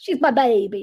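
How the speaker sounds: attempted put-on Texas accent. Speaker attempts a Texan accent: Texan accent. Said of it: "I'm trying to do a Texan Texas accent".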